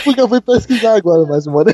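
talking while laughing throughout. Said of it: "Eu tô rindo".

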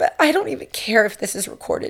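tearful, speaking through tears. Thanking another speaker for being there as a mom, crying while talking. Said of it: "I did not mean to cry".

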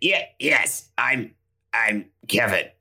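slow, halting, stumbling, drawn-out put-on voice. Playing a character who imitates another character: imitating Kevin's voice. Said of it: "I'm gonna do a voice doing a voice".

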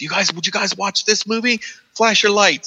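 put-on very high, eager, excited little kid voice, begging. Retelling a loudspeaker announcement before trailers: imitating an excited little kid. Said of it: "it sounds like a little kid who wants to show you this movie trailer".

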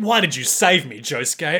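put-on bitter, complaining tone. Acting out Rohan's lines to Josuke, mock-bitter Rohan voice. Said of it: "I'm so bitter about this".

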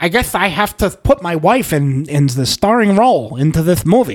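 put-on lisping voice. Retelling what a director supposedly said about casting: Steven Spielberg voice with a lisp. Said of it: "he talks with a lisp, Steven Spielberg".

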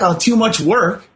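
ordinary delivery

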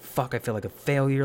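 contained, mild, screamed outburst. Retelling their own reaction after ripping off their mask, retelling own screaming. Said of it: "I'm like sitting here screaming like".

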